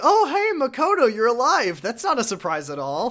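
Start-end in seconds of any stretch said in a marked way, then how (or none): 0.0-1.8 very high, loud, bouncing, swooping character voice. Retelling a game scene where Sagawa slow claps: Sagawa impression. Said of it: "He's like".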